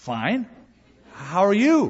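hesitant, unsure, tentative sing-song delivery. Retelling a woman's reply to a voice from the next stall, acting tentative. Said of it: "she said very tentatively".

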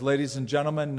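ordinary delivery

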